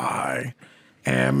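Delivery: play-acted, creaky, rough, furious delivery. Retelling the Iron Man ending scene: imitating Tony Stark sounding angry. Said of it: "really angry".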